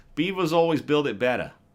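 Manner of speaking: Boston accent, said loud. Asked to repeat a phrase with a Boston accent, speaker says it in Boston accent. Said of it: "now say it with a Boston accent".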